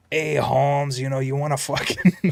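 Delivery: imitated Mexican accent. Retelling how she mimicked the accent of people at a stoplight: imitating her mimicked Mexican accent. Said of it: "she starts going to this fucking".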